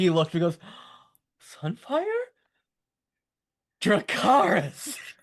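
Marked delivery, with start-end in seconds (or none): 1.6-5.0 put-on maniacal gleeful cry, very high and swooping. Retelling a moment from the episode, imitating gleeful maniacal glee. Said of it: "With the glee in his voice as he's just laughing maniacally".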